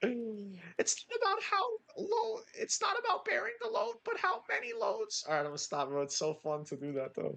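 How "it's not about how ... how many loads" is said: put-on, higher-pitched, Kermit-like pundit voice. Doing a Jordan Peterson impression for the others: Jordan Peterson impression. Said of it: "I love doing Jordan Peterson".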